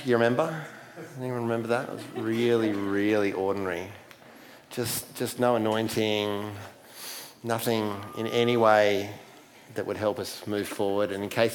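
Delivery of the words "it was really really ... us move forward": dripping with sarcasm. Recalling last sunday's service to the church: deeply sarcastic. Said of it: "I'm being deeply, deeply sarcastic".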